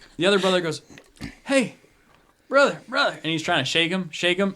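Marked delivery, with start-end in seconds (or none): 1.4-3.1 put-on slurred drunk speech, higher and louder. Voicing a drunk brother trying to wake the other: drunk slurring voice. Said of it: "hear him slurring their words".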